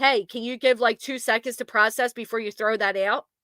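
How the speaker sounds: ordinary talk, nothing marked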